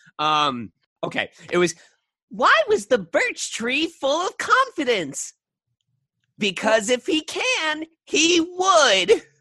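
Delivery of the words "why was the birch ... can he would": very high, loud cartoon skeleton voice. Speaker recalls the lines of a past character, skeleton voice. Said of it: "do this skeleton voice".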